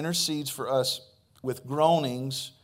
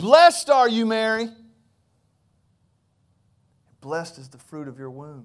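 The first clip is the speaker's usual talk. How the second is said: put-on scream, louder; 7 dB louder than usual. Retelling a Gospel scene, the speaker acts out Elizabeth screaming at the top of her lungs. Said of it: "Elizabeth screaming at the top of her lungs".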